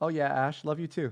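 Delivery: very robotic, flat, machine-like voice. Imitating a recorded voice answering someone: robotic voice imitating Ian. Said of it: "in Ian's voice in a very robotic way".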